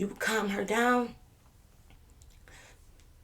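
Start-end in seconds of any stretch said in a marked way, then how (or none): 0.0-1.2 high, slow, drawn-out coaxing drawl. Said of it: "This what he was doing to me".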